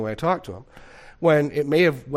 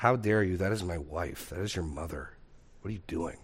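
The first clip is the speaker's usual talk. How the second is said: stern, displeased, angry voice; 6 semitones lower, 9 dB quieter than usual. Retelling scolding a child who swatted at the mother: imitating own past angry voice. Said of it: "a certain amount of anger in my voice".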